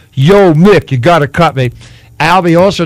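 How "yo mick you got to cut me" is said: lazy, slow, drawn-out drawled delivery. Retelling how a colleague does an impression: Sylvester Stallone impression. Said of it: "Does an impression of Sylvester Stallone go".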